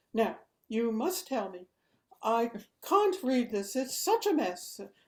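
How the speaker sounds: put-on strongly British accent, agitated and worked-up. Retelling what a caller said on the phone, very British accent. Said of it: "A very British accent".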